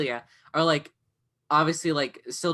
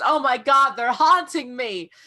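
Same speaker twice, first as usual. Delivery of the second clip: put-on overdramatic voice, higher and louder; 9 semitones higher, 6 dB louder than usual. Retelling a scene, imitating Lydia being dramatic about ghosts: dramatic Lydia imitation. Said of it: "she's so dramatic about it".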